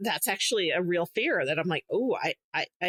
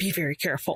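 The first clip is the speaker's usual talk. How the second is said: secretive, conspiratorial, confiding tone. Retelling a woman meeting the speaker at the house, hushed tone. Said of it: "she's like in a hushed tone".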